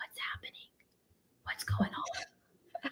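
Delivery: very quiet, hushed whisper. Retelling asking mom what was happening at the protest: retelling a whisper. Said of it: "I whispered to my mom".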